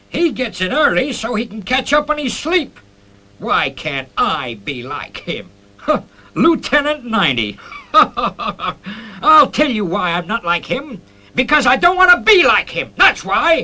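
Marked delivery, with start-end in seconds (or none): 7.9-13.6 shouting, much higher and louder. Nagged to be more like a punctual lieutenant, he snaps back: shouting. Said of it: "You're shouting".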